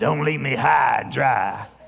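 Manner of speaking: really coarse, rough, gruff man's voice. Retelling a phone call to a man about a house, in a rough, gruff voice. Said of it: "that was his really rough, gruff voice".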